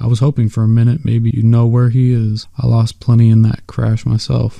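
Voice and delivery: ordinary delivery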